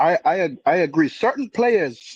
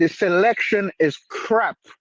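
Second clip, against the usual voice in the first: ordinary talk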